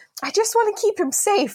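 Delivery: high-pitched screaming. Retelling a dream where the cops took the child, reenacting screaming at them. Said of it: "I'm like screaming at the cops like".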